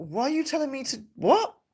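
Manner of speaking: mock, high, baffled, really confused voice. Imagining this woman's reply to Cecil, imitating someone confused. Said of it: "really confused".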